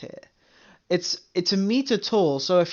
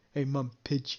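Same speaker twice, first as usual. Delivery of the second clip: goofy, silly, daft, playful voice; 6 semitones lower, 10 dB quieter than usual. Retelling spotting pigeons on the fence with mum: retelling own goofy voice. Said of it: "goofy voice with my mum".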